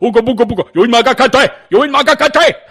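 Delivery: attempted Nigerian accent, put-on. Retelling what attackers throwing bleach would sound like: imitated Nigerian accent. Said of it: "wouldn't it sound like, ... They have Nigerian accents".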